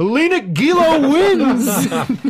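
high, slow, laughing shout.

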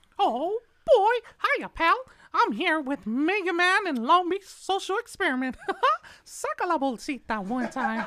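high, loud, swooping squeak. Asked to say something for a shout-out, doing a Mickey Mouse voice. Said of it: "he makes the best Mickey Mouse voice".

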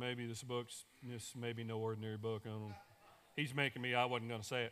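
put-on reluctant, unenthusiastic tone. Mimicking a neighbor who said the line back: imitating someone saying it without enthusiasm. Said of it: "didn't say that with some enthusiasm".

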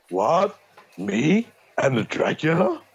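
slow, deliberate actor voice, every word drawn out. Answering a question about an accent: generic Keanu Reeves voice. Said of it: "generic Keanu Reeves".

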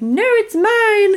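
put-on very high little alien voice with English accent. Imagining a scene, the speaker gives the little alien's reply to its mother: little English-accented alien. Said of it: "Little English accented alien".

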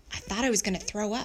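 usual speaking voice

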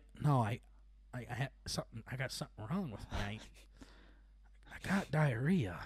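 put-on grave, earnest, soft, stammering, dead-serious voice. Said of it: "being so serious about this as a kid".

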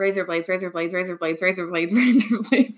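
words run together at speed, rapid rattled-off repetition. Demonstrating a word trick by repeating a phrase, saying it really fast. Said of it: "if you say razor blades really fast".

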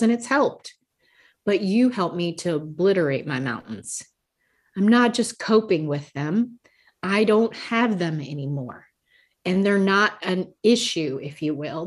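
plain

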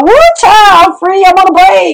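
very high-pitched, gleeful, joyful scream. Retelling being free again after two years, the speaker re-enacts screaming. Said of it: "I was screaming".

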